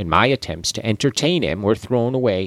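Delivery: ordinary delivery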